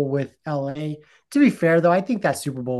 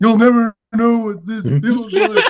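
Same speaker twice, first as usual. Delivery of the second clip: mock tearful, high, loud, blubbering sobbing voice; 7 semitones higher, 7 dB louder than usual. Retelling a FaceTime call after Denver won the Super Bowl, imitating someone crying. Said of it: "he's crying and he's just like".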